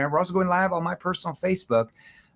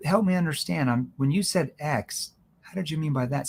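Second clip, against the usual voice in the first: confused, puzzled, questioning tone. Teaching how to ask questions, giving an example: confused questioning tone. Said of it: "See, that's a confused tone".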